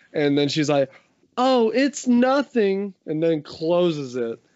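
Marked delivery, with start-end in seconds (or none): 1.5-3.0 mock very high, smug, sarcastic, dismissive voice. Retelling a movie scene, quoting a character at the window: imitating a sarcastic voice. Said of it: "with that sarcastic fucking voice".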